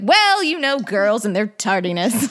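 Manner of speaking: condescending, dismissive, offhand tone. Retelling a scene where an officer brushes off a missing girl, imitating a dismissive officer. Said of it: "the same idiot officer, and he's like".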